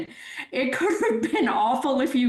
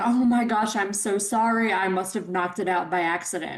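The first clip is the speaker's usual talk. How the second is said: put-on over-the-top gushing tone, lower; 4 semitones lower than usual. Retelling a scene where a character apologizes all over herself: imitating a gushing apology. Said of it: "Beth is all over herself, apologizing".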